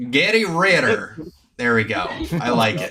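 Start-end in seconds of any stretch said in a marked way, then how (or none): 0.1-1.2 Southern twang, laid on more, pitched up. Saying a name again, this time with a southern accent. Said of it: "I'm gonna put more, like, Southern stank on it".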